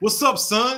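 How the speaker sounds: put-on New York accent. Retelling how a roommate talked on arriving in Harlem: imitating a put-on New Yorker accent. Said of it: "trying to come in and speak like a New Yorker".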